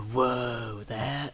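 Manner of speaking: California drawl with a stretched-out whoa. Repeating the first example for the other speaker: Keanu Reeves voice. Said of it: "not quite so Keanu Reeves".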